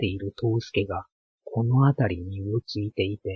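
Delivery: plain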